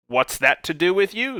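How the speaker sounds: monster voice, angry. A narrator reads the monster's retort to Geralt, angry. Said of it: "said the monster angrily".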